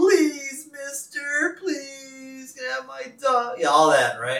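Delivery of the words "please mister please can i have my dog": fake weepy begging, very high, very slow, sobbing. Retelling a cartoon boy practicing his plea for his dog: imitating a fake tearful plea. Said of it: "he tries to give himself some fake tears".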